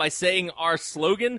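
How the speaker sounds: ordinary delivery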